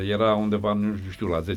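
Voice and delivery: normal talking voice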